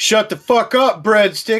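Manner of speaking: all-out, loud screaming outburst. Retelling how the other speaker screamed into the microphone: imitating someone screaming. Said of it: "and you were really like".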